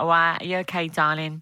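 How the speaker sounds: put-on Essex accent.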